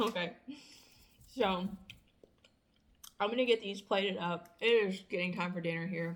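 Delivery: speaking while eating, mouth full of food. Talking to viewers while eating a cookie, talking with mouth full. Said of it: "talk to you guys with my mouth full of cookie".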